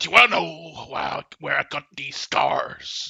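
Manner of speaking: put-on raspy, rough, creaky character voice. Retelling a game moment by voicing a character: Joker voice. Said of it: "a Joker character voiced by me going".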